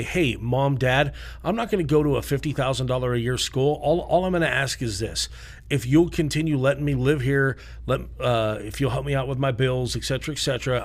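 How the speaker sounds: plain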